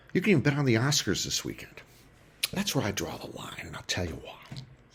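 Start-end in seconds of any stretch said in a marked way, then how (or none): 2.5-4.5 hushed, confiding whisper. Talking about sports betting, then dropping to a whisper. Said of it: "Why am I whispering?".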